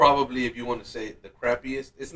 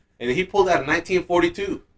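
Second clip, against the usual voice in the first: ordinary talk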